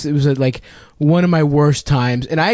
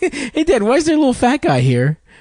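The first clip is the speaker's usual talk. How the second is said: put-on very high, swooping, genuinely curious toddler voice; 11 semitones higher than usual. Retelling a toddler's question to his dad, imitating a curious kid. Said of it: "he was just gen- genuinely curious".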